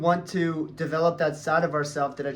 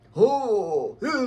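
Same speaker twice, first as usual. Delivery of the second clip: put-on corny, high big-boy accent with drawn-out "oh"; 7 semitones higher, 4 dB louder than usual. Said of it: "they all have these big boy accents".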